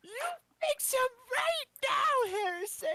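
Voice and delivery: very high, shrill, intimidating scream. Screaming at another character to fix him right now: screaming at someone in character. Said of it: "I'm gonna frickin' scream at him right now".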